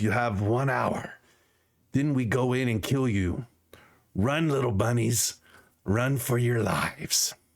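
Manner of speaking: throaty, guttural doglike growling voice. A game narrator voices a captor who has just freed the players, in a guttural dog voice. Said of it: "he's basically in this guttural dog voice".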